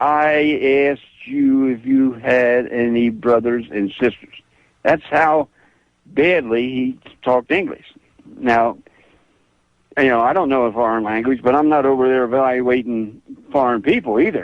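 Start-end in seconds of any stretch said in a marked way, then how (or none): 0.0-4.3 very slow, deliberate, drawn-out word-by-word speech. Retelling how a man who banged his fist repeated his question; saying it real slow. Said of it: "then he said it real slow".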